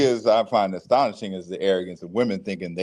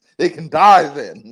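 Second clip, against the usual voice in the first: loud, booming, menacing, pitched-up fantasy villain voice; 7 semitones higher, 9 dB louder than usual. Teasing the other speaker about a remark, repeating it like a Lord of the Rings villain. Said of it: "You sound straight up like a villain out of Lord of the Rings".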